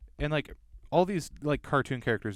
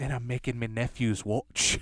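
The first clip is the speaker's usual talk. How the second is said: put-on duck voice with Scottish accent. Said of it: "he has a Scottish accent".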